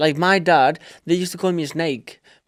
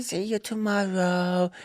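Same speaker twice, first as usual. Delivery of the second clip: put-on angelic child voice, quieter; 3 semitones higher, 5 dB quieter than usual. Retelling how the boy says goodbye at nursery: Tiago's angelic voice. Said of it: "Tiago put his angelical voice".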